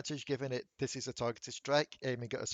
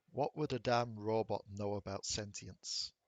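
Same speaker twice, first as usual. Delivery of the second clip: muttered whisper, lower pitch; 5 semitones lower, 4 dB quieter than usual. Game master voices a character muttering to the party, muttered whisper. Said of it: "You think you hear him whisper something".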